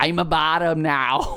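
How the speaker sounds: loud, loose strongman accent. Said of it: "That was kind of Arnold Schwarzenegger".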